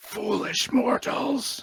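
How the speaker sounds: shrill, very high, hateful snarled words. Narrator voices a ghostly elf woman addressing the mortals, snarling. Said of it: "she snarls".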